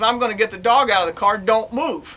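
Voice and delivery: ordinary talk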